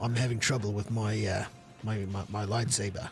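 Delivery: very low, deep put-on soldier-like voice. Joking about how a voice actor would sound voicing a clone: put-on clone voice. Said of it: "You mean Nubs is gonna sound like a clone?".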